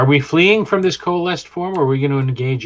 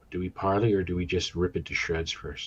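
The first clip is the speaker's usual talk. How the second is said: whispered, lower and quieter; 6 semitones lower, 11 dB quieter than usual. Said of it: "I whisper that".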